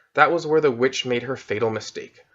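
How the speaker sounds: plain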